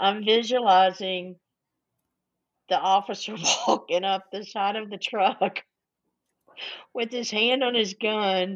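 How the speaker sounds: giggling, laughing right through the words. Picturing an officer walking up to a truck, laughing while talking. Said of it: "Sorry for laughing".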